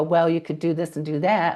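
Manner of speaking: ordinary talk, nothing marked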